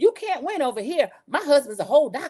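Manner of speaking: yelling, pitched high. Retelling a reality show argument, imitating someone yelling. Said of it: "Doctor Heavenly yelled out".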